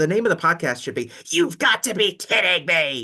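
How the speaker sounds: exaggerated, over-the-top, very high, loud yell. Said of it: "the exaggerated Don West voice".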